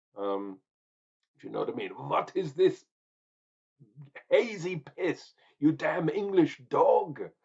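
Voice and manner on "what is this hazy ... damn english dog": weak put-on German accent, loud, slow, drawn out. Scolding an English drinker as a German in a beer keller, weak put-on German accent. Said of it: "I did a weird accent, trying to be German, but not very German".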